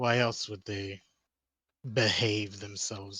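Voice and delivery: thick, heavy, dripping sarcastic tone. Answering a question about whether everyone behaves from fear: heavy sarcasm. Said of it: "I say that with the highest amount of sarcasm".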